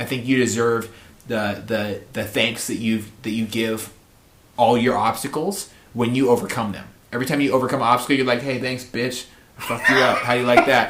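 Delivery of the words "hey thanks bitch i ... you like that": mock cocky, taunting trash talk. Acting out what is said to an overcome obstacle: acting like a cocky asshole. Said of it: "I don't mean to talk like an asshole".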